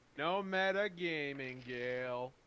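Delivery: shouting. Speaking to Gale during the game, yelling. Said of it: "I'm just yelling at you".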